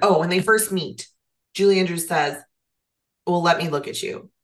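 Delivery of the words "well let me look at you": plain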